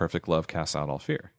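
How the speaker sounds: plain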